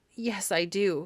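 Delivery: heavy, thickened voice. A young man answers an old lady in a thick voice. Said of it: "he said in a thick voice".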